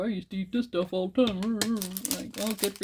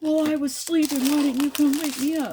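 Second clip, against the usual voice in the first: mock furious, loud, high-pitched screaming; 7 semitones higher, 5 dB louder than usual. Retelling a man yelling at station staff over a missed bus: imitating a man screaming. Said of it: "he's just screaming".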